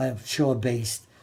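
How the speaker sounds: normal talking voice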